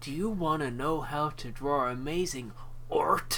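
alien creature voice, video game style. Speaker imitating a guy the group knows, in a Halo Elite voice. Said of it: "He sounds like a fucking elite from Halo".

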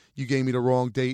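ordinary talk, nothing marked

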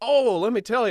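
put-on loud, very high-pitched thick Southern accent. Retelling what an old attendant said to the speaker, imitating thick southern accent. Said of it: "thick Southern accent".

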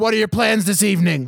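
put-on aggressive voice. You're retelling to friends what an actor said in a scene, imitating an aggressive tone. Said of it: "Like super aggressive".

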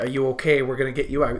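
plain

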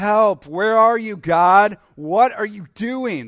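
loud, high, angry and accusing crying out. Acting out God's people crying out to God: imitating people crying out angrily. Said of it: "God's people are more just crying out".

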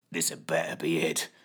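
put-on wheezing. A man fighting G-forces to reach a lever: wheezing. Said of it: "he wheezed".

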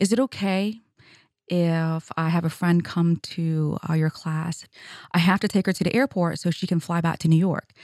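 normal talking voice

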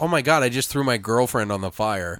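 ordinary talk

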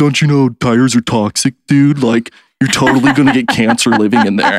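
jaded, cynical, know-better voice. Quoting what people say on the video, in a mock cynical commenter voice. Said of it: "That's the proper voice for anybody in every cynical post".

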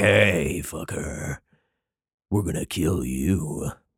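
very slow, drawn-out, menacing thug voice. Retelling a scripture passage as the men who threaten the prophet: imitating men threatening to kill. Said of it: "I assume that's what they sounded like".

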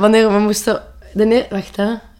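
stuttering, stammering speech. Telling a story and catching oneself stuttering again; stuttering. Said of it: "in mijn stotter".

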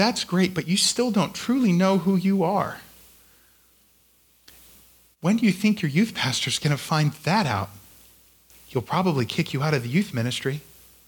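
put-on whisper. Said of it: "that small incriminating voice just whisper".

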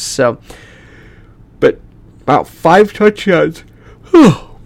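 tired yawning mid-sentence. Reviewing a football game's rushing stats, yawning. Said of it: "There I go again, yawning".

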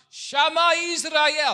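loud, very high-pitched shout. Retelling how a rabbi addressed an orphanage assembly: imitating a shout. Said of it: "the rabbi got up and he shouted".

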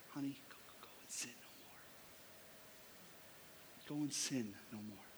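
tender, gentle, very hushed, close whisper. Acting out Jesus speaking privately to the woman: acting out Jesus whispering. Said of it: "just whispering in her ear".

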